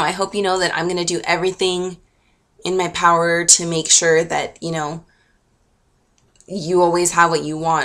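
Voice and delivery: plain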